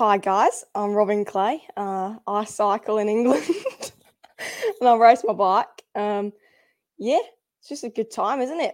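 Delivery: playful put-on Australian accent. A cyclist, asked to introduce themselves to the audience, in an australian accent. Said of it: "introduce yourself to the audience in an Australian accent".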